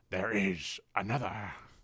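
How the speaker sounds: low, soft, hushed character voice. Quoting a line from the movies in my best Yoda voice. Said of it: "from my best Yoda voice".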